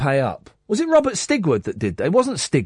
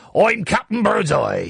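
pitched-up piratey voice; 5 semitones higher than usual. Showing that English people can do a piratey voice, Captain Birdseye pirate voice. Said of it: "that sort of piratey voice".

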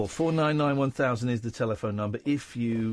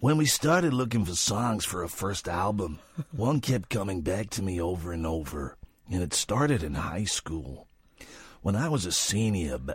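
put-on low, smoky, borrowed storyteller accent; 4 semitones lower than usual. Urged by another speaker, telling a story in a man's accent: put-on smoky accent. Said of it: "He's got quite a smoky voice".

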